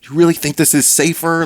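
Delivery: put-on very high, furious yelling. Retelling screaming back up a parking ramp at a man, retelling an angry scream. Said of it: "I'm just screaming back up to him that".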